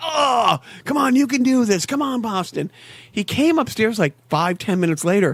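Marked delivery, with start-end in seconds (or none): 0.0-2.7 grunting, groaning, pitched-up voice. Retelling a son groaning at the tv: imitating groaning and grunting. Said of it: "groaning and grunting like I do".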